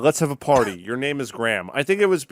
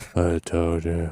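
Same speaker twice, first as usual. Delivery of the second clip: put-on very low, close murmur; 8 semitones lower, 4 dB quieter than usual. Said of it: "it's an A S M R".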